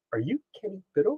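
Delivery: barely audible, soft, high-pitched half-whisper. Retelling how someone in a dark hallway asked a question: imitating a half-whispering voice. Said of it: "almost like a whispering voice go".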